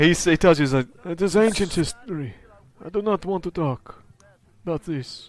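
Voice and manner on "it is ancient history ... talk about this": put-on high-pitched, vaguely Eastern European accent. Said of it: "my accent is unplaceable on purpose".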